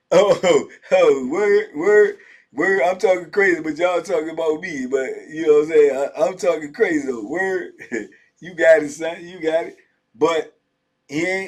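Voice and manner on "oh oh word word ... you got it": put-on giggly mocking voice, louder. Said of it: "he gonna be giggling too".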